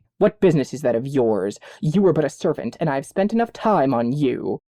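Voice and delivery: impatient, dismissive, brushing-off tone. Narrator reading the vampire's reply to the servant girl running after him, impatient. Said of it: "said impatiently".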